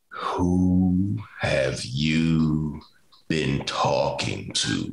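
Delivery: dropped deep, low voice, "who" stretched long. Retelling how he leaned in after the twenty percent request, imitating his deep voice. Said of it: "he said in his deep voice".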